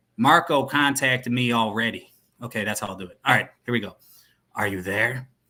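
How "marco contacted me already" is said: put-on western cowboy-guy accent. Trying out the yellow phone's voice, the speaker does a cowboy accent. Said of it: "He'll be like a cowboy guy".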